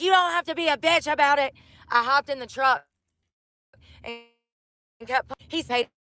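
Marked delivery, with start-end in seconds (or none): 0.0-1.5 put-on irritated, angry man's voice. Retelling what a man at the gas pump said: imitating an angry man cussing. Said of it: "he got mad and started cussing".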